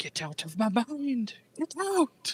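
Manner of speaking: soft, high, hushed, disembodied muttering voice. Running a game, voicing a voice the players hear, soft disembodied muttering. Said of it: "a soft, disembodied voice muttering".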